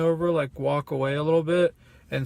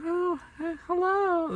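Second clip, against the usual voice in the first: very high, sugary, sweet put-on little-girl voice; 13 semitones higher, 3 dB quieter than usual. Describing how people say hello after direct eye contact, in a sweet little girl voice. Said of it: "this little little girl sweet voice".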